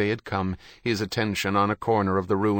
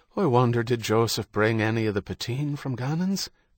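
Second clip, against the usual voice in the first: plain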